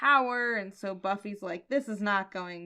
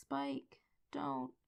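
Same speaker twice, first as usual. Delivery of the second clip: small, tiny, very hushed, quiet voice; 4 semitones higher, 14 dB quieter than usual. Recapping a Buffy episode, quoting Buffy's line to Spike in Buffy's little voice. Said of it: "Buffy says in this little voice".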